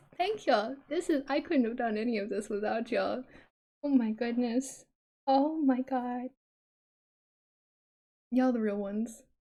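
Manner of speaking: voice holding back tears. Thanking everyone for their support, holding back tears. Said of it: "I'm not gonna cry".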